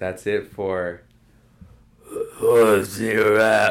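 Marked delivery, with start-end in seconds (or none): 2.1-3.7 booming, loud, drawn-out zombie voice. Wrapping up, the speaker asks a question in a zombie voice. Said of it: "That's my zombie".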